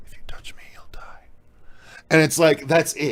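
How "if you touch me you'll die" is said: quick, quiet, hushed, unnerving eerie whisper. Retelling the most unnerving moment of a movie, retelling a whisper. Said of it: "he just whispers and he just goes".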